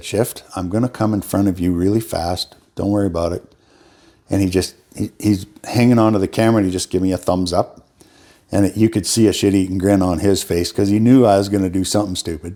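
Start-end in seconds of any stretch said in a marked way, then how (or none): 0.0-3.4 quiet, softly spoken delivery. Recalling a warning to the cameraman while filming: retelling a quiet remark. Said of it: "I just very quietly said".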